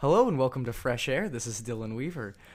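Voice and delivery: bright, cheery public-radio announcer voice. Imitating the other speaker's podcast intro: imitating NPR host voice. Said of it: "You're like".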